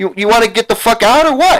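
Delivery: heated, furious rant, high and climbing. The speaker, freaking out at someone they call an asshole, tells him to leave: furious ranting. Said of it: "I'm freaking out because you're a fucking asshole".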